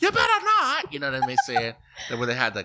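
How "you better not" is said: very high, shrill, furious screaming. Recalling a season 10 scene at Keisha's birthday party, imitating Remy screaming. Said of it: "when she's screaming".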